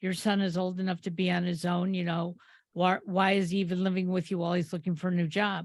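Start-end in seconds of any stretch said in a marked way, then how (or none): none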